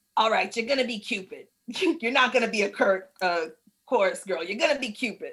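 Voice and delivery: put-on old smoker's voice. Retelling what the director told her, in a put-on old smoker's voice. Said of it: "He's been smoking since 1807".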